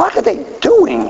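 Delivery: baffled, slow, high voice.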